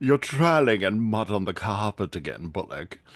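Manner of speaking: snooty, stuck-up, haughty scolding tone. Retelling a scene where the landlord scolds Bullock: imitating snooty Nivens. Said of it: "this very snooty".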